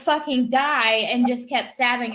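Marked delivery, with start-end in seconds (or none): 0.0-1.1 put-on sudden, exasperated yell, at wit's end. Retelling stabbing a co-actor who would not die: retelling own yell. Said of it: "So I just yelled".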